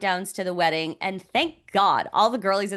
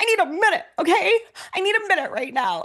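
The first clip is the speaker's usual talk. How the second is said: put-on tearful voice, much higher pitch, faster pace; 11 semitones higher, 3 dB louder than usual. Recounting an unexpected moment with a man, retelling being near tears. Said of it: "you don't need to cry".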